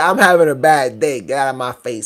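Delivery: snippy, bratty, dismissive attitude. Retelling what a girl said to you, mocking her attitude. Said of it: "This whole attitude".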